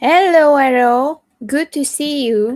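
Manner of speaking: loud, high-pitched yell carrying across a distance. Greeting someone, yelling without meaning to. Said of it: "I don't know why I'm yelling".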